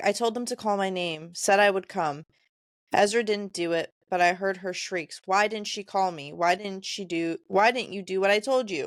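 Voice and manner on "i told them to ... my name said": usual speaking voice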